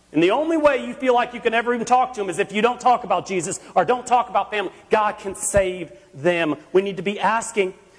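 normal talking voice

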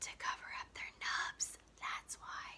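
very soft, secretive whisper, barely voiced. Leaning closer to the narrator to answer his own riddle: whispered. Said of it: "he whispered".

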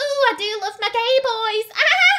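obnoxious, loud, shrill, drawn-out high gushing. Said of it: "she's laughing very loud, being quite obnoxious".

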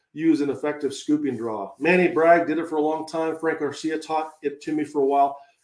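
ordinary talk

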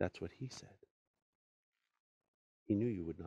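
said softly under the breath, quiet murmur. Narrating a legend, reading the queen's aside, said quietly to herself.

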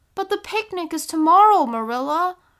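sudden, high, loud cried-out exclamation. A girl kept in her room answers the woman who confined her, crying out. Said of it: "cried Anne".

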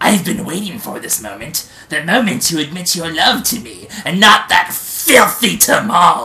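loud, booming cartoon supervillain voice. Storyteller voicing Skinly bursting in on Lucky, Shredder voice. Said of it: "like the Shredder from Teenage Mutant Ninja Turtles".

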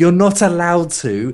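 put-on shouting. Retelling a rant at an episode's automated turret: retelling own screaming. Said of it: "I was just screaming at the".

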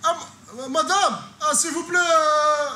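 loud, high-pitched begging.

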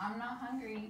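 ordinary delivery

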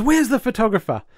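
high-pitched, furious rant, losing control. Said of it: "Marcy's going off her nut".

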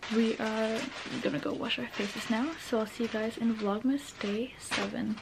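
hushed, soft half-whisper, barely there. Signing off late at night, saying goodbye to viewers: half-whispering. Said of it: "I had to whisper because it's one thirty".

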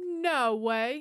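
plain

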